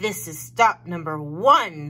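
loud, hissed storybook-creature delivery. Narrator reading a story, the Grinch reaching the first house, hissing Grinch voice. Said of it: "the old Grinchy Claw hissed".

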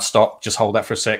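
ordinary talk

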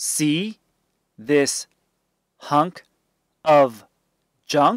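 ordinary delivery, nothing marked

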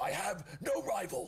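hoarse, raspy, very high yelling voice. Performing the voice of the rival character, raspy rival voice. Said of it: "Just like a raspy".

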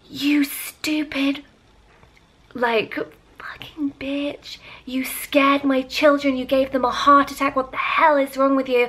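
put-on angry woman screaming, high and furious. Retelling how the woman who hit her screamed at her: imitating a woman screaming. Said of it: "really screaming at me".

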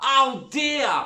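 very high, loud, spat-out exclamation. A woman speaks up in the scene, spat out. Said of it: "the woman spat".

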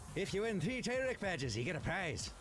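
very quiet, soft, high fake Irish accent. In a game, the speaker voices a game character addressing the players: fake irish accent. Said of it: "Why are you like false Irish? What is that accent?".

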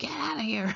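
shooing cry with the voice up high. Retelling yelling at a panther in the yard: imitating own yell. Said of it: "and I yelled".

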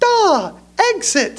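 put-on very high little kid voice, sounding out words. Retelling how Jason, not yet reading, sounded out a word, imitating Jason's high voice. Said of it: "he had a real high voice".

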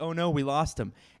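mock sarcasm laid on thick, with fake dismay. Retelling a newspaper headline about a traded player: imitating a sarcastic tone. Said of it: "very sarcastic".

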